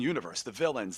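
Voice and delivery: ordinary talk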